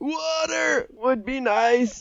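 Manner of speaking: very high, slow, drawn-out suffocating voice. Retelling a scene where Sandy offers a drink: SpongeBob dying of suffocation voice. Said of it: ""I'm literally dying of suffocation" voice".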